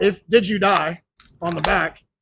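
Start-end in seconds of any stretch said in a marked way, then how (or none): none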